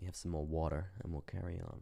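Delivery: put-on American accent. Pausing to drink water before carrying on: american accent. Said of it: "I don't know why I do an American accent".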